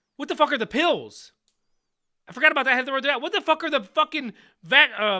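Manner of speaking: full-on, loud, high-pitched shouting outburst. Mid-conversation about a head cold, the speaker starts yelling at the listener. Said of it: "Why are you yelling at me?".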